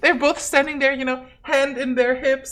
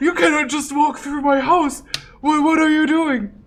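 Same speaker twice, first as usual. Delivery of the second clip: put-on old man voice, higher; 2 semitones higher than usual. Narrating a scene, the speaker voices a man stopping someone walking through his house, in an old man voice. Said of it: "Don't hurt the old man".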